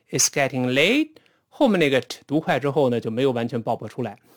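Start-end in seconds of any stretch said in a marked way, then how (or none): 0.1-1.1 pitch rising upward at the end of late. Signalling you have not finished speaking: rising pitch on late. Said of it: "Late 升上去".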